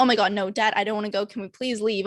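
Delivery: put-on panicked voice. Retelling begging a dad to leave before a first speech, imitating own panicked plea.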